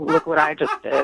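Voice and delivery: smooth, slick, smug, boastful charmer voice. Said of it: "smooth talker".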